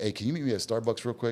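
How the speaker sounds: ordinary talk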